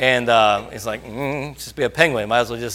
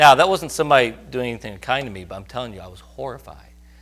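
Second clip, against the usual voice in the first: normal talking voice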